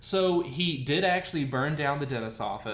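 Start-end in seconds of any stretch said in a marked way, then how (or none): none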